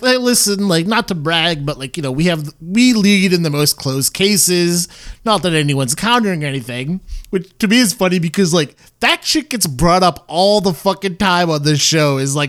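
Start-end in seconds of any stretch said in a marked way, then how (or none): none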